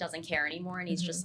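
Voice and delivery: plain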